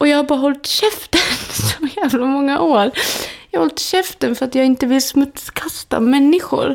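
tearful, crying speech. A speaker opening up about keeping quiet for years, crying while speaking. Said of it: "jag tänker inte säga förlåt nu att jag gråter".

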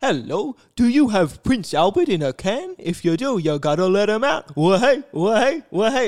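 creepy clown voice, loud. Showing someone what the clown in the original movie sounds like, in Tim Curry's Pennywise voice. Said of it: "Tim Curry's is kind of like".

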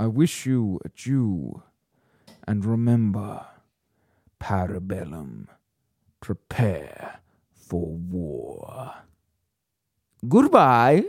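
put-on suave, smooth voice. Doing an accent as asked, closing the episode: Winston voice. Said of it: "I want you to do Winston".

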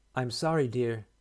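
kindly, sympathetic, gentle tone. A woman speaks to the blind narrator whose mother is lost, in a kind voice. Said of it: "she said in a kind voice".

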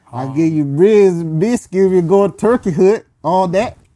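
very loud, high, put-on Southern Texas drawl. Showing off accents to someone who likes them, in a put-on Texas southern drawl. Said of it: "I'm from Texas now. with a uh, southern drawl".

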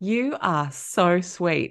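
slow, sweet, tender voice through a laugh. Retelling someone's reply about a tennis rant: imitating sweet laughing speech. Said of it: "laughs in a really sweet way and goes".

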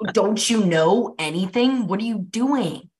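restrained mock shouting. Describing an all-star season of a show, acting out viewers mock-yelling at the screen. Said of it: "you're like yelling at the screen".

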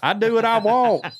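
put-on Southern accent. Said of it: "we immediately gave her a Southern accent".

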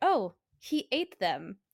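sarcastic, sardonic, slow sing-song drawl. Retelling own earlier remark about Alfred Packer, imitating own past sarcastic delivery. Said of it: "same cadence, same line delivery".

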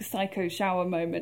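ordinary delivery

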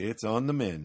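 ordinary talk

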